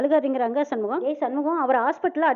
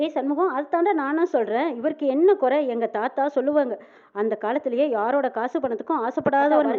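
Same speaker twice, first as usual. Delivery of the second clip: plain reading voice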